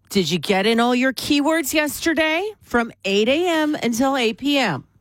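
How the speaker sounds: motherly voice. Morning radio host quizzing the co-host on air: mom voice. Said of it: "I'm going to use my mom voice here".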